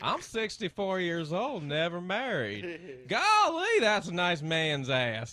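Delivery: very slow delivery, every word drawn out. Joining in the impression of TV host Huell Howser: Huell Howser impression. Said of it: "That was mine too".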